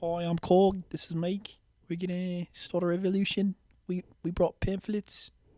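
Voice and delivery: put-on New Zealand accent. Asked on the spot for a best impression, doing a new zealand accent impression. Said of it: "channel my inner Kiwi".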